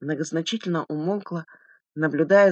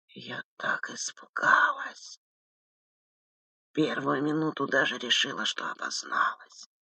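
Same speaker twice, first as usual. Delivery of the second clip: deep, husky, low bass whispered voice; 3 semitones lower, 6 dB quieter than usual. Victoria Pavlovna telling the investigator about a man she recognized, in a bass whisper. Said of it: "понизила голос до басовитого шепота".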